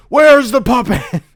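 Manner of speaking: poor, half-committed hero voice, high and booming bellow. Acting out Batman pinning a comedian down: bad Batman voice. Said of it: "This isn't a good Batman".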